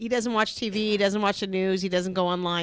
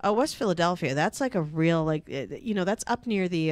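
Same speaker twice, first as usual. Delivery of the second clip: earnest, dead-serious explaining tone; 3 semitones lower than usual. Retelling a coworker's answer about west philadelphia: imitating a coworker talking all serious. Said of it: "he starts talking, like, all serious".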